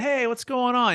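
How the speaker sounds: casual, non-threatening tone. Demonstrating voice styles, showing a greeting like a best friend: relaxed, best-friend voice. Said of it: "the playful, like curious voice".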